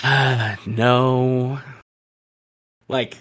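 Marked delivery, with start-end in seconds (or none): 0.0-1.6 mock dejected child voice. Retelling how they sounded a moment ago: imitating a dejected child. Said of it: "dejected child levels".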